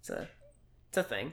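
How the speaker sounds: very quiet voice dying away, fading trail-off. Explaining a story setup to another speaker, trailing off quietly. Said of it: "your voice getting all quiet and creepy".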